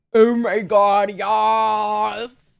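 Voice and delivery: low, gravelly, vocal fry demon voice. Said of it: "It literally just sounds like vocal fry demon".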